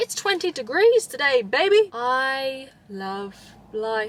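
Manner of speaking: put-on, loud American accent with stretched, drawn-out I. Enjoying the warm sun on the skin: American-sounding accent. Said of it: "that sounded so American".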